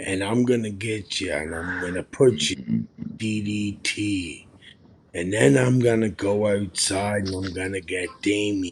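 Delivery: hushed, very quiet, methodical, every word weighted. Recalling a wrestler's promo style: imitating Jake the Snake Roberts talking slow. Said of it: "Jake would talk so slow".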